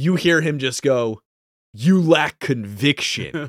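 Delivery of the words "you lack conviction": put-on double-layered villain voice, higher. Retelling a scene line in the voice described: Darth Vader voice. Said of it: "you hear the Vader voice at the same time".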